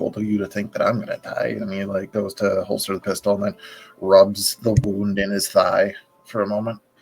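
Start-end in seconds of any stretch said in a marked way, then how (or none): 0.0-1.6 muttered quietly under breath. Voicing a character replying to a threat: muttered under his breath. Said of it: "sort of under his breath".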